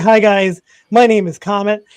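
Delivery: speaking in a dog voice. Voicing the dog climbing into a lap on stream: voicing the dog Comet. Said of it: "He's like".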